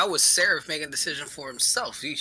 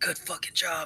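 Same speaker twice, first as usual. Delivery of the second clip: muttered side-of-the-mouth aside, slightly high; 5 semitones higher than usual. Congratulating a party member in character, muttering under breath. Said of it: "under my breath".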